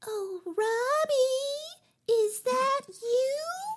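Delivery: very high tiny voice, you drawn out. Retelling a story, the speaker does what a little voice said, in a tiny little voice. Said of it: "So this little voice said".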